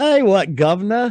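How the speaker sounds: very high, loud put-on Cockney accent. Wishing the royals would talk Cockney, giving an example in a Cockney accent. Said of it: "all the royals would start talking with a Cockney accent".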